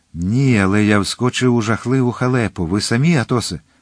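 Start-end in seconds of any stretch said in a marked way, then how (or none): none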